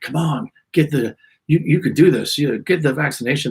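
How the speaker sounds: pushy, hard-sell, coaxing used-car-salesman patter. Speaker mocking vaccine promotions, imitating a used car salesman. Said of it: "hucking it like a like a used car salesman".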